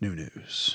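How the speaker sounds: laid-back, soft, breathy, low-key near-whisper. Contrasting herself with more exciting people, a chill, low-key delivery. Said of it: "I'm like more like chill".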